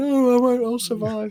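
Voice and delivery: very high, stretched-out, frantic, panicked voice. Imagining a child losing the final survival mission: imitating a panicking child. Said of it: "they'll be panicking".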